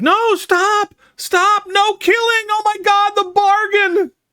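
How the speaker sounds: very high, desperate, panicked screams. A man comes out from behind the kitchen and sees people fighting, screaming.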